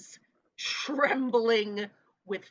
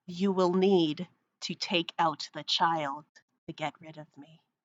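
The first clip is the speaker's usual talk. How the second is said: hissing voice that sounds made of slime; 4 semitones lower than usual. In a game, a slime-like entity speaks to the players; hissing slime voice. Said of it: "And it hisses".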